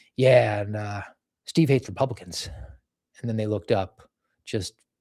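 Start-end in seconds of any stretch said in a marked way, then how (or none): 0.2-2.5 mock deadpan delivery, lower and slower. Speaker retells a man's answer to FBI investigators, retelling a deadpan answer. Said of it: "He's really funny and deadpan answer these guys".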